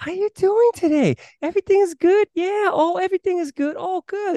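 put-on bubbly, upbeat cheer, pitched very high. Describing women who put on a fake voice, imitating them: fake upbeat voice. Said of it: "when they put on like a fake voice".

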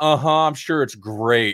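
put-on mocking tone. Retelling teasing a partner about a movie she was watching: retelling own mocking tone. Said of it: "I was just making fun of her".

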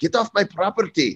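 very high-pitched Scottish accent. Joking about becoming a lord, the speaker plays a landowner in a Scottish accent. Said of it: "talking with a Scottish accent".

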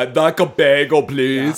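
dropped deep voice. Imagining a talking device that speaks for them: Arnold Schwarzenegger voice. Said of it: "I'm doing Arnold".

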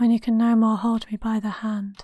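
creepy, eerie whispering. Saying a line out of nowhere during a class discussion: creepy whisper. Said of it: "You just creepy whispered".

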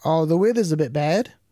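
terrible fake British accent, pitched high. Trying out an accent, then calling it terrible: terrible british accent. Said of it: "So that's a terrible British accent".

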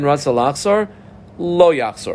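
normal talking voice

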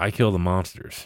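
put-on very calm delivery. Retelling what a dude said to John about the house, very calm voice. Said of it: "in the most calm voice goes".

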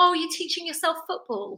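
patronizing, talking-down tone. Retelling what a builder in the house said: imitating a patronizing tone. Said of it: "he said in quite a patronizing way".

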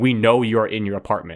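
ordinary talk, nothing marked

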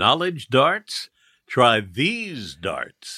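smooth, velvet-smooth tone. A host invites Desus and Mero to play a game; smooth velvety voice. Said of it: "Is that velvet?".

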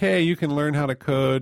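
calm, soothing, comforting, reassuring presenter tone. Imitating the soothing public voice used to tell people they can code: imitating own soothing public voice. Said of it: "I'm very soothing. I'm like".

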